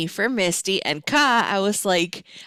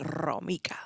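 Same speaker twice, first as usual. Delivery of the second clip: heavy emphasis on the R of Romika; 3 semitones lower, 10 dB quieter than usual. Saying a name with one's own accent: stressed R in Romika. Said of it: "I say it with my accent. I put the emphasis on the R".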